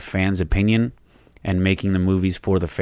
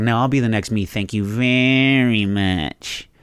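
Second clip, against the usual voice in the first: mock super condescending slow drawl, "very" drawn out; 3 semitones higher than usual. Retelling an actress's reply to a joking compliment: imitating Brie Larson, condescending. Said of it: "super, super condescending".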